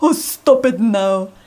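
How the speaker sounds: loud, drawn-out, scolding mum voice. Asked for an impression of his mum, scolding the kids: imitating his mum. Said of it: "do an impression of your mum".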